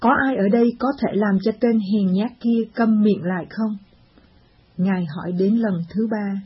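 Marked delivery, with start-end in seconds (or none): none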